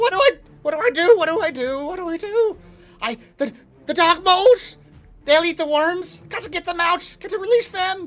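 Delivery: squealing little goblin voice, very high-pitched. Narrator voicing a lone goblin on its turn, talking to himself, squealing goblin voice. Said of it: "you hear the lone goblin voice just squealing to himself".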